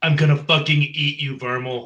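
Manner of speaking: loud, menacing, threatening battle-cry yell. During a tabletop game fight, the character yells at Vermal, yelling. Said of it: "I yell".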